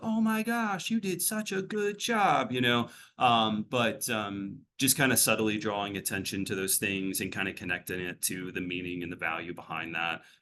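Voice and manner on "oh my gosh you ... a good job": very high, goofy, gushing tone of praise. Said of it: "really goofy".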